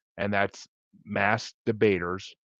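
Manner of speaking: slow, careful enunciation. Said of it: "it sounds bad if you say it fast".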